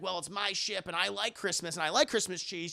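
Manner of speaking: ordinary talk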